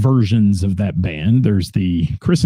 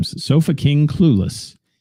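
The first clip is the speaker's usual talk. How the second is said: slow, deliberate, spaced out word by word. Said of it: "I have to say that slow".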